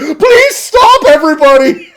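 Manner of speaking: very high, frantic, panicked pleading. Game master voices Gluten as people pull weapons, Gluten panicking. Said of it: "Gluten's just constantly in panic mode".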